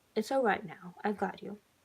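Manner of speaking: plain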